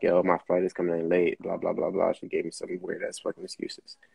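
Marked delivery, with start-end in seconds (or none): none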